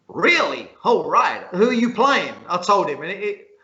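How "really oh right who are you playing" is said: ridiculous put-on American accent, swooping pitch. Retelling a barman questioning a darts player, in an american accent. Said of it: "this is my American accent".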